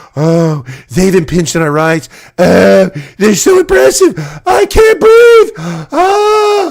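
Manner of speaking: weepy theatrical whining, crying voice, drawn-out oh. Mocking others as crybabies: mocking whiny crying voice. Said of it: "we're gonna cry and claim".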